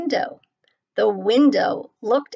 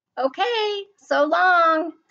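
bright, cheerful, pitched-up tone; 8 semitones higher than usual. A tumbleweed saying goodbye after being ignored, cheerfully. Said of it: "said Rosie cheerfully".

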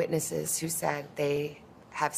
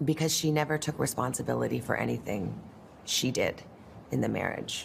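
ordinary delivery

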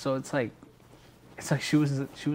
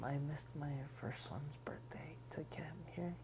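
soft, hushed, whispered delivery. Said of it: "She was like".

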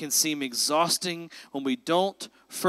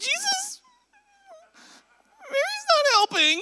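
very high, whiny, swooping pitch, rising at the end. Voicing Martha the way the speaker hears her, with the uptick in her voice. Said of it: "like the uptick in her voice".

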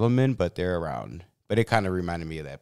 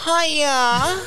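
squeaky, very high, loud squeal. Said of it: "I can't even hit it that high".

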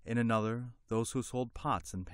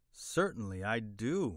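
usual speaking voice

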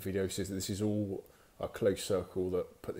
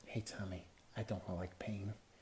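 very soft, quiet, sultry, put-on American accent; 11 dB quieter than usual. Speaker retells what a woman used to say, in a pretend sexy American accent. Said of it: "pretend American accent to try and sound sexy".

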